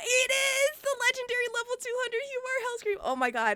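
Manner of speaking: very high, giddy, gushing fangirl excitement. Interviewer introducing a legendary guest before he joins; emotional, fangirling excitement. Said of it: "I'm getting emotional".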